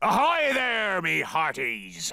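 put-on cartoon pirate voice. A guest arrives at a party dressed as a pirate, pirate voice. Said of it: "dressed as a pirate".

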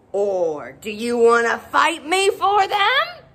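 grumpy, defiant, taunting, swooping, drawn-out delivery. Narrator voices the bad-tempered ladybird challenging the friendly ladybird, screeching. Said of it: "a bad-tempered ladybird flew in from the right. ... screeched the bad-tempered ladybird".

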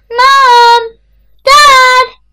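very loud, very high call, one word drawn out. In a prison block corridor, calling for mom and dad; calling out. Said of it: "Not called out".

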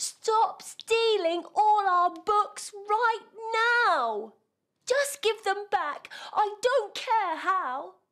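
very high-pitched shouting. Reading a story aloud, a character shouts through the window at the thief outside, shouting. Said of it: "shouted to the thing outside".

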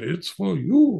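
put-on German accent. Retelling an uncle handing over the phone: Uncle Morris's German accent. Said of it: "he turned to me in his German accent".

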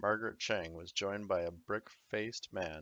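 plain reading voice

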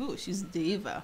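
mock, very hushed, admiring, approving tone. Showing how diva is said as praise: imitating a complimentary diva remark. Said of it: "I say it in a compliment way".

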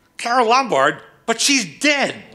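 screechy, shrill, very high-pitched woman's voice. Retelling what she said on catching him red-handed, approximating her screechy voice. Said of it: "I won't do her screechy voice, but that I'll approximate it".

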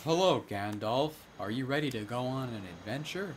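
dull, lifeless deadpan delivery. Imitating someone with the most monotone voice ever: flat monotone voice. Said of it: "with like the most monotone voice ever".

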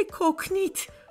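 trembling voice. Narrator reads Mama answering Odo as they step toward the water, trembling voice. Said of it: "zegt mama met bevende stem".

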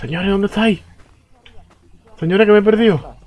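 very high, frightened, lost-sounding calling out. Playing a game, lost and calling out for the others: scared and lost. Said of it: "esta gente que me da miedo".

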